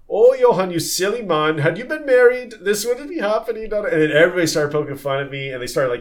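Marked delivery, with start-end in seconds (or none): 0.1-3.8 very high-pitched put-on German accent. Speaker retelling how the steward teased him, in a fake German accent. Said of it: "fake German accent".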